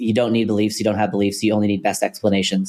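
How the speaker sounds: usual speaking voice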